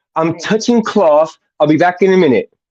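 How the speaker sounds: London Cockney accent. Asked to try a London accent, London Cockney accent. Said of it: "That's my London accent".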